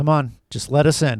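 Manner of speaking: mock emotionless, level deadpan tone. Retelling a film scene of people at the door: imitating a deadpan tone. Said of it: "that sort of deadpan tone".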